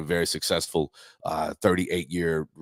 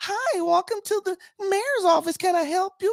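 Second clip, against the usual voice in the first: very high, small cute little voice. Act out a young lady greeting a visitor to the mayor's office in a little cute voice. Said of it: "little cute voice".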